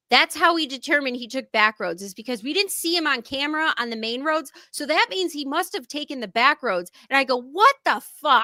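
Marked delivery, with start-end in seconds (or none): 7.4-8.4 loud, all-out hollered outburst, as loud as possible. Retelling a reaction while listening with headphones in: imitating own loud yell. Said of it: "as loud as I possibly could".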